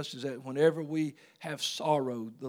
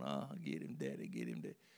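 giggling, grinning, cheerful voice; 13 semitones lower, 11 dB quieter than usual. Retelling cheering on a brother's spanking as a kid: imitating own giggling. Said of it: "I was grinning and giggling, going".

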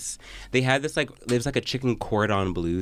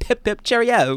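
put-on British accent, much higher pitch; 12 semitones higher, 6 dB louder than usual. Recalling two weeks spent there, she slips into a put-on British accent. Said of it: "did you think you had like a British accent".

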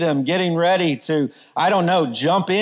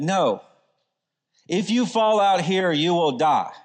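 mock very serious, grave delivery. Recounting what she said to them, the speaker acts out her very serious tone. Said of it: "with a very serious tone and said".

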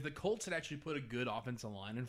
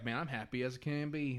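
put-on East Texas accent. Retelling what a coworker would say, imitating Lane. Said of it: "I don't know why he sounds like that".

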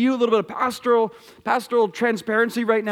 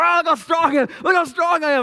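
bragging tone, pitched up; 6 semitones higher, 3 dB louder than usual. Mimicking athletes flexing after scoring: imitating a bragging athlete. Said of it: "They're like".

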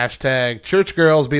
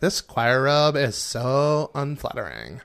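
exaggerated put-on Valley Girl accent, quieter; 4 dB quieter than usual. Reading a list of church girls jokes: exaggerated Valley Girl voice. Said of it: "going more and more Valley Girl with each one".

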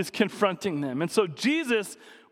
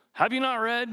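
put-on scornful, mocking, sarcastic tone; 4 semitones higher than usual. Showing how Jesus questions the Pharisees: Jesus sarcastically mocking. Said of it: "Jesus sarcastically mar-, mocking the Pharisees".

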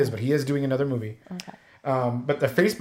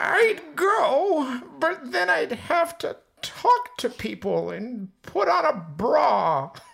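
put-on very high old grandma character voice; 13 semitones higher than usual. Reading a drawn card for others to guess the voice, in grandma voice. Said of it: "It was grandma".

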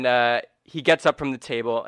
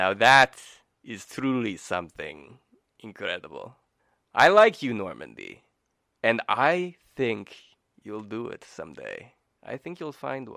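animated lizard creature voice, pitch swooping up and down. Voicing a lizardfolk who grins at a player's big goal: grinning Crit voice. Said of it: "a big grin goes across his lizard folk face".

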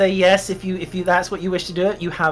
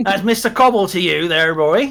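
put-on Cornish accent. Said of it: "I lost my Cornish then".

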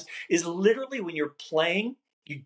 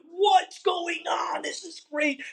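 joyful screaming, very high; 12 semitones higher than usual. Recalling a fellow player lighting up and screaming at him, imitating happy screaming. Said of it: "it's a happy screaming".

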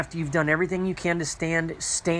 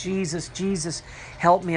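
acted crying out, delivered slower. Speaker retells their prayer during a terrible temptation: retelling crying out. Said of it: "I just cried out".

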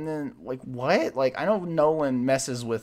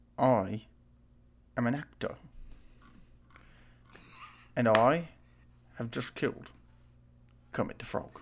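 whispered, breathy film-actor-style voice; 5 dB quieter than usual. Asked to do an impression, performing it: Michael Caine impression. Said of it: "Can you do your best Michael Caine impression right now?".

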